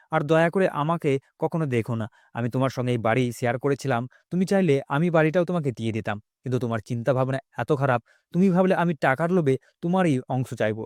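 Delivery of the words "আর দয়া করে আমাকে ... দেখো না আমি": plain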